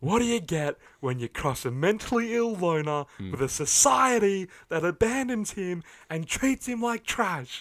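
put-on shouting villain voice. Retelling the movie's climax, imitating the Joker shouting. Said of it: "he just shouts out, like".

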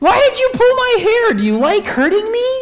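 put-on high-pitched scream like a hurt child. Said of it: "and he screams".

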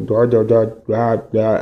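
low, flat, hard-to-make-out robotic drone voice. Explaining how they talk on video calls, the speaker does a robotic voice. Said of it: "como robotizada que a veces no se entiende".

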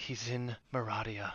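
hushed, soft half-whisper, right up close. Voicing a character who hugs a player's character tightly: half-whispering. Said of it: "and she just whispers".

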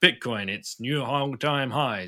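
cross, angry evening-news anchor voice. Imagining what a TV newscaster will say in coming months; mock-angry News at 10 newscaster. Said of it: "that angry newscaster on News at 10".

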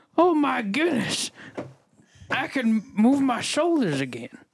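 blustery cartoon rooster voice with big pitch swoops. In a skit, a character whose voice has changed speaks in a Foghorn Leghorn voice. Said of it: "You sound like you turned into Foghorn Leghorn".

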